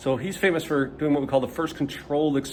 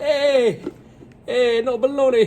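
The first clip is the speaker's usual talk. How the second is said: bad Italian accent, very high, drawn out; 10 semitones higher, 5 dB louder than usual. While explaining what Francesco Redi did, chime in as him with a bad Italian accent. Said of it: "that was me in a bad Italian accent".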